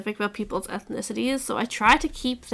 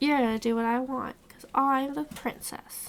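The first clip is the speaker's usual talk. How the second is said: put-on bratty, demanding spoiled little girl voice; 2 semitones higher, 3 dB quieter than usual. Acting out a bratty princess character: bratty child voice. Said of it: "that bratty child of".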